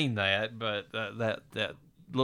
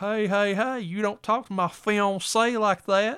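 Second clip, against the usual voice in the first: very high, slow Southern drawl, hey stretched; 11 semitones higher than usual. Retelling a movie scene, the speaker quotes Ray McKinnon in a put-on Southern accent. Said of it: "he's got this real put on Southern accent".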